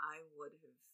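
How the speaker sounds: mock whispered voice. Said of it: "he says it in, like, a whisper".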